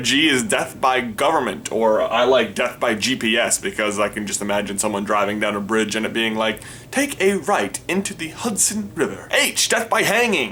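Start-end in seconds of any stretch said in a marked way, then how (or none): 9.3-10.5 bright, happy, very high, cheerful voice. Listing a kind of death for each letter of the alphabet, happy. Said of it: "Why do I sound so happy about that?".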